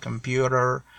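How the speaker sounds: 'computer' said the American English way. Explaining how Americans pronounce the letter T: American accent on 'computer'. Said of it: "in American English, they say like that".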